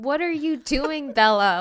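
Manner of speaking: high-pitched shout. Retelling how a partner pauses the movie to yell at the TV: imitating someone yelling. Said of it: "he starts yelling at the T V".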